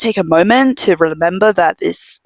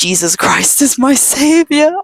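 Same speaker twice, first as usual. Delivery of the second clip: play-acted, scared, frantic, high, rising scream; 7 semitones higher than usual. Recounting a night a shadow appeared at the door, retelling a scream. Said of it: "I start like screaming like".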